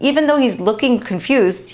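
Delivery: ordinary delivery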